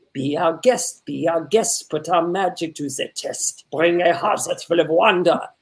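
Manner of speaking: put-on French accent. Explaining accent work, the speaker demonstrates his practice sentence: French accent. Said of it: "When I'm doing a French accent".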